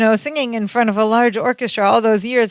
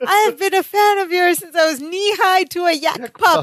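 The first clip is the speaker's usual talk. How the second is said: mock screaming voice, higher pitch; 8 semitones higher than usual. Retelling a sitcom scene where a character screams his admiration: imitating someone screaming. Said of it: "And he's screaming".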